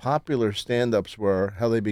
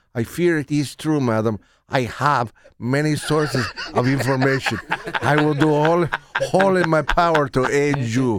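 badly done, put-on Spanish accent; 3 semitones higher, 3 dB louder than usual. Redoing a line after the director asked for it with a spanish accent. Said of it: "why don't you do it with a Spanish accent?".

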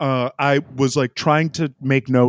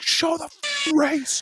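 put-on shout, higher; 3 dB quieter than usual. Retelling screaming at the tv during a race replay: imitating own screaming. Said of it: "I was screaming at my T V".

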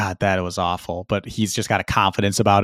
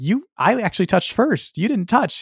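put-on cheery voice, pitched higher; 12 semitones higher than usual. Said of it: "this weird chipper guy to everybody".

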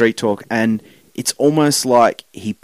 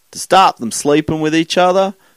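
sudden, high-pitched American Southern accent; 6 semitones higher than usual. Asking why children were kept apart by chain wire: American Southern accent.

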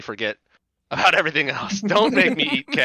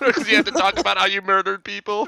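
put-on whiny crybaby voice, higher; 6 semitones higher than usual. Acting out a meme mocking someone crying in court: mock whiny baby voice. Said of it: "whiny baby, like, the crying face".

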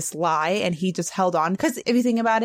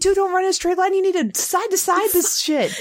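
acted-out, very high-pitched screaming yell; 13 semitones higher, 3 dB louder than usual. Recounting watching a show, reenacting own screaming at the TV. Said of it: "I was screaming at the TV".

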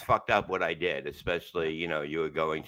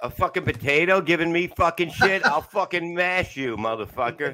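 furious yelling, very high, very loud, shrill; 12 semitones higher, 8 dB louder than usual. Yelling back at a potato puppet that mocked him, mock-angry yelling. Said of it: "You're yelling at the wrong guy".

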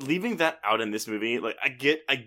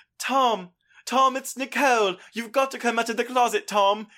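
put-on British accent, very high pitch; 11 semitones higher, 4 dB louder than usual. Retelling a South Park scene where Nicole Kidman begs Tom Cruise: Nicole Kidman impression in British accent. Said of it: "That's a British accent".

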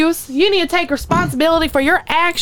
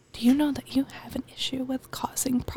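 hushed, really quiet whisper; 3 semitones lower, 13 dB quieter than usual. Playing the judge in an improvised bit, in a really quiet judge voice. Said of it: "Just really quiet".

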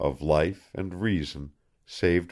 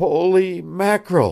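weak, feeble, very high-pitched outburst; 11 semitones higher, 6 dB louder than usual. Reading a story where a sick boy hears news: feeble exclamation. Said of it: "exploded the feeble tones".

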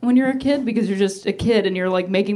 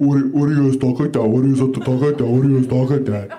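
mocking put-on masculine voice, lower; 9 semitones lower than usual. Retelling what straight guys always ask, imitating straight guys. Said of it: "They're always like".

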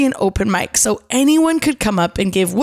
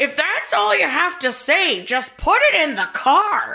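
put-on grumbly elderly woman voice; 5 semitones higher than usual. Retelling an old lady calling out from the back, in a grumbly old lady voice. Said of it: "an old lady with a grumbly voice".

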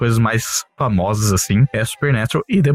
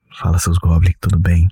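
quiet hushed voice, lower pitch; 4 semitones lower than usual. Greeting listeners late at night, speaking softly. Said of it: "tô falando baixinho assim".

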